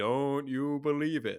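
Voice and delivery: eerie, spooky, ghostly voice. Retelling the opening line of a cartoon, in a spooky voice. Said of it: "there was a spooky voice that said".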